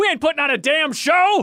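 very high, mock, put-on scream. Retelling how Barrett screams at the crowd: imitating Barrett screaming. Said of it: "screams at the crowd, and he goes".

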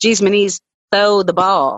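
blue-collar Kentucky accent. Recalling a Kentucky blue-collar childhood, speaking in a Kentucky blue-collar accent. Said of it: "my Kentucky blue-collar childhood, you might hear me say".

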